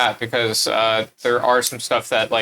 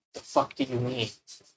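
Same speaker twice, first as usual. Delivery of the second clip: breathy, very quiet whisper; 3 semitones higher, 10 dB quieter than usual. Saying a line covertly into a character's ear: whispering. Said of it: "when you were whispering".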